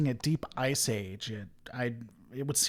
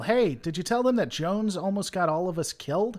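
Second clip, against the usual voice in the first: man's raised, pitched-up yell in the background; 6 semitones higher, 3 dB louder than usual. Narrator voices a man yelling in the background over a comm badge; male voice yelling. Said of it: "you hear a male voice yell".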